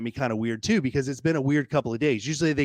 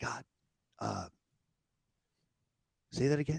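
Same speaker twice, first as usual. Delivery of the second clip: hushed, very quiet whisper; 2 semitones lower, 10 dB quieter than usual. Retelling talking aloud to God in a chiropractor's waiting room, whispering. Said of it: "So I'm whispering".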